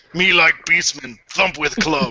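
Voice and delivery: put-on grunting creature voice. Joking after being told to add more grunts: grunting Beastman voice. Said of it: "Add in a couple more grunts".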